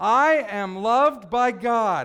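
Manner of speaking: with real conviction. Leading a group in saying it one more time, from the gut. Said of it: "I want to hear it from the gut".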